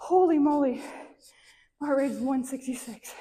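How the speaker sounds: breathing heavily, deep breaths. Right after finishing a set, the speaker checks their heart rate, breathing deeply. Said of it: "Sorry for my deep breathing".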